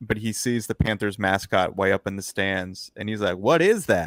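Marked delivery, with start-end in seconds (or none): 3.4-4.1 put-on thick Southern accent. Retelling a coach's sideline question about a mascot, thick southern accent. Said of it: "this thick Southern accent".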